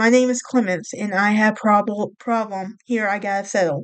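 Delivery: normal talking voice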